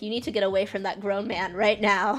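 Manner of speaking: mock, hollered, screaming voice. Retelling yelling at the tv while watching a show: imitating own screaming at tv. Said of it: "screaming at my T V".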